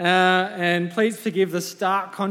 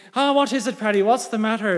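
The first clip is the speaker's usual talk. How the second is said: put-on terrible, unconvincing Irish accent. Telling a joke, the speaker voices a neighbour answering a call, in a bad Irish accent. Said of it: "Excuse my Irish accent if it's terrible".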